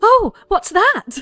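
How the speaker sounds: startled surprise, pitched very high. Telling a story, acting out her reply to the knight news: imitating her surprised reaction. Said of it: "She like looks really surprised".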